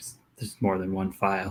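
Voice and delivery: muttered under the breath. Voicing a character answering about a file, under his breath. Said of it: "under his breath".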